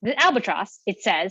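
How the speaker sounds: ordinary delivery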